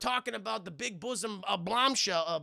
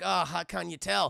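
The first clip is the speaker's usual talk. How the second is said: put-on mean New York accent voice; 2 semitones lower than usual. Retelling a movie scene to chat: mean-sounding John McClane impression. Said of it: "he just sounds mean".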